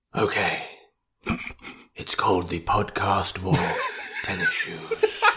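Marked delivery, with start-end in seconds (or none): 1.9-5.2 hushed, whispered nature-documentary narrator voice. Podcaster asked to narrate their podcast in the wild, BBC documentary narrator voice. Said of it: "as if you're narrating a BBC documentary".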